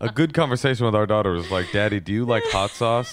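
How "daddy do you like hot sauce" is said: ordinary talk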